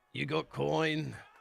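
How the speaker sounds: no-nonsense, blunt sailor character voice. Voicing a sailor character who looks up and speaks, no-nonsense sailor voice. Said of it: "very like no nonsense sailor with a graying beard".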